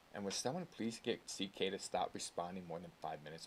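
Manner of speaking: ordinary talk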